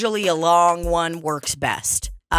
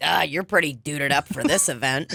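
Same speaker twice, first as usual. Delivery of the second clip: put-on mocking voice; 3 semitones lower, 3 dB quieter than usual. Retelling how a sister teases about clothes: imitating someone mocking. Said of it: "she'll make fun of you and be like".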